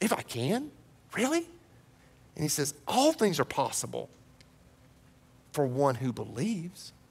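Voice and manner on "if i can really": high, sarcastic, incredulous tone. Imagining how Jesus says it in verse 23: mock-sarcastic Jesus line. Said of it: "like a little sarcasm".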